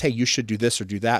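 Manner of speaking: ordinary talk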